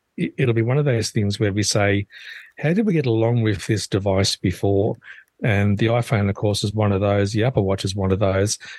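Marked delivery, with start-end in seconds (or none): none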